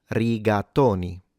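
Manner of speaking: rigatoni with stress on the to syllable. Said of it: "The stress is on to syllable".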